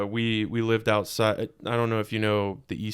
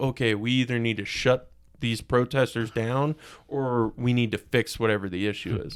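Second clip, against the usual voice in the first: usual speaking voice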